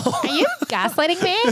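very high-pitched, put-on basic girl voice. Joking about gaslighting Starbucks customers, the speaker slips into a basic bitch voice. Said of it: "that's my basic bitch voice".

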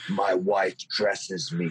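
play-acted mean, hard, menacing voice. Retelling his reply to a man who said he liked his shoes, meanest voice. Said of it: "in my meanest voice".

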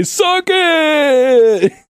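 very high shriek, drawn-out on "it". Retelling what a schoolmate screamed in the hallway, imitating Tony's scream. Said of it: "he'd scream in the hallway".

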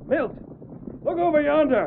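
ordinary delivery

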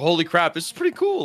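high, thrilled, excited gush of amazement. Retelling a first reaction to viewers watching live: imitating own excited reaction. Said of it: "my first, like, emotional reaction was like".

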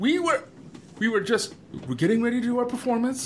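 frantic, high, fast, panicked babbling.

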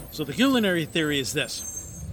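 normal talking voice

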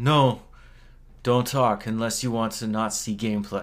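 put-on thick, heavily laid-on European accent. Retelling what a man told a room of gamers, in a thick European accent. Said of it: "in his thick European accent".

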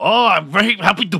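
put-on Mexican-American East LA accent.

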